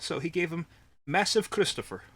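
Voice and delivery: bad, way-off put-on Swedish accent. Announcing the doctor's diagnosis for a driver: attempted swedish accent. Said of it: "I probably said that in an accent that's not Swedish in any way".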